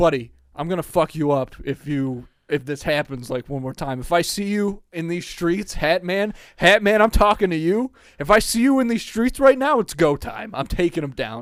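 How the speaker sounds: loud, rising, threatening yell. Retelling a sleep paralysis episode, imitating own past yelling at the Hat Man. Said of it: "So I start yelling at the Hat Man".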